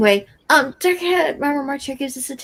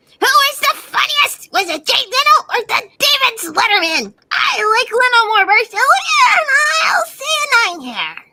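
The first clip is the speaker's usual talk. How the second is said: very high, loud, swooping, sing-song goofy silly voice; 9 semitones higher, 6 dB louder than usual. Reading a comment aloud after being asked for a silly voice: Sticks voice. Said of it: "I haven't done Styx in a while".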